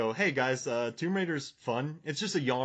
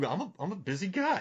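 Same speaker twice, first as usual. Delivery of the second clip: put-on sassy, defensive tone, pitched up; 6 semitones higher than usual. Quoting a favorite movie line: Daniel Wu's sassy line reading. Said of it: "he said it very sassy to her".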